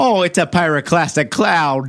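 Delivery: folksy Minnesota accent. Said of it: "that Minnesota Nice tone of [name]".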